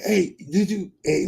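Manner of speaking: put-on stutter. Retelling what a cousin said after looking at the bag: imitating someone stuttering. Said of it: "he stuttering and shit".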